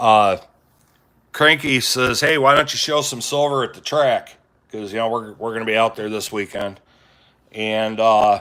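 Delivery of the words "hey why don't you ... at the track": usual speaking voice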